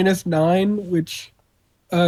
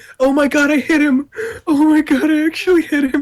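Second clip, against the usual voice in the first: very high, tearful laughing, crying with laughter; 10 semitones higher, 3 dB louder than usual. Player right after landing a hit in a game, crying. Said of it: "I'm still crying".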